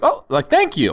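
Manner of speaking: acted, mock-surprised tone. Asked how the thank-you sounded, the speaker retells their surprised thank-you. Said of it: "a little surprise of like".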